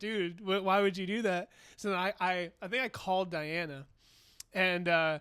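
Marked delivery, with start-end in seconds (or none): 0.0-1.5 put-on panicked freaking out. Speaker recounts a guy's reaction, imitating him freaking out. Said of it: "he starts freaking out".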